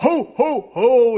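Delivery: shouted yell. Retelling how Papa, dressed in a Santa suit, came in, retelling a yell. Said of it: "he was yelling".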